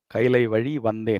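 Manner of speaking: plain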